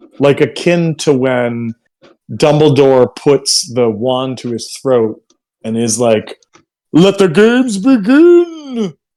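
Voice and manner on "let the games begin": mock, very high, booming announcer voice, drawn-out start. Comparing a voice in a story to Dumbledore's announcement, booming Dumbledore voice. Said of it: "this voice booms out".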